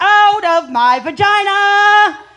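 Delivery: shrill, very high, slow, drawn-out full-volume yell. Retelling a yell at a gynecologist during an exam: retelling a loud yell. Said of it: "decided to yell out".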